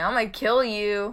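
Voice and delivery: haunted ghost voice. Imagining a voice heard in a haunted antique shop, imagined haunted voice. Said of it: "hear this vo- voice saying".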